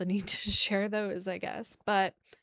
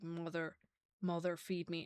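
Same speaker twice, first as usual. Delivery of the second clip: very deep dragon voice, quieter; 9 dB quieter than usual. Speaker acts out a dragon's line, very deep dragon voice. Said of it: "really, really deep, draconic voice because he's a dragon".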